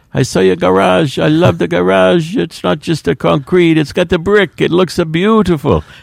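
put-on Italian accent, pitched very high. Quoting an old-timer met at a Sunday Memorial Mass, put-on Italian accent. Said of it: "Is that your Italian accent?".

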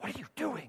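dramatic film-style whisper, very hushed, barely voiced. Retelling what a girl said during a movie: imitating a movie whisper. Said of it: "it would be like a movie whisper".

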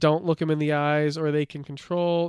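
ordinary talk, nothing marked

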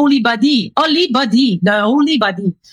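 put-on French accent. Retelling what a priest said when giving them a paper, in a French accent. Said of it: "you have to picture this with a French accent".

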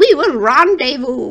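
sweet, darling, small little voice. Quoting the dinosaur character Dr. Bleeb about the rendezvous, in Julia Child's darling little voice. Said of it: "her little voice is just darling".

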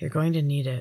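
quiet, soft, even pace. A narrator reads a man's line to the first-person narrator: said quietly. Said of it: "he said quietly".

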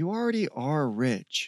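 usual speaking voice

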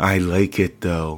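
sweet yet threatening, menacingly cute delivery. Retelling what a young woman said to him, performing it menacingly cute. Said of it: "In the most menacingly cute and disruptive way".

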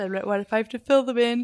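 talking through a yawn. Speaker chatting with a listener, talking through a yawn. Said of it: "Sorry, I'm yawning".

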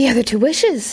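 rapid, hurried, fast speech. A woman answers a man's puzzled question, replying rapidly. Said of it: "she replied rapidly".

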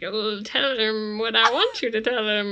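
loud, dorky voice. Imitating a show character giving an order: dorky Cigarette Smoking Man voice. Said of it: "always sounds like more of a dork than I expect".

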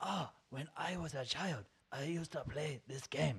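put-on soft, slow, drawn-out old man's voice. Describing a movie, the speaker imitates how its old man talks. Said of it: "I probably shouldn't be talking like this, but that's how he talks".

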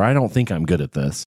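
ordinary talk, nothing marked

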